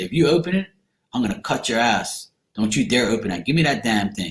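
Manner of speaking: ordinary delivery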